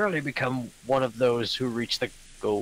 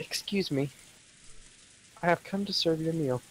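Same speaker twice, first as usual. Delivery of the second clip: put-on girly voice, higher pitch; 5 semitones higher, 3 dB quieter than usual. Reading a maid's line aloud in a visual novel: put-on girl voice. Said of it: "I have to do a girl voice now".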